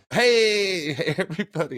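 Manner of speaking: loud, high yell with drawn-out hey. Opening a show by greeting everybody: yelling a greeting. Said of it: "I don't know why I'm yelling it".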